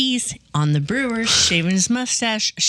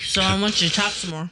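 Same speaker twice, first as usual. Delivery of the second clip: speaking with mouth full, chewing. Eating a cookie, a speaker asks the other host to keep talking, mouth full. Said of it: "I'm eating a cookie".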